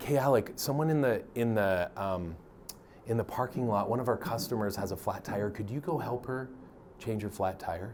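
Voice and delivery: soft, hushed half-whisper, barely audible. Retelling a manager asking a coworker to help a customer, imitating a whisper. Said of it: "He kind of whispers".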